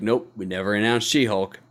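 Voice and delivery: put-on flat deadpan. Recounting a developer's reply, imitating it deadpan. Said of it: "just deadpanned like".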